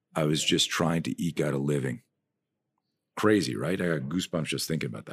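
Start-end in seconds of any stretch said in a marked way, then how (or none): 0.2-2.1 put-on quiet mutter under the breath. Retelling what a famous actor said quietly while staring out a limo window: imitating someone saying it under his breath. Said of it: "he says under his breath".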